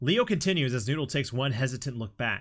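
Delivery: ordinary delivery, nothing marked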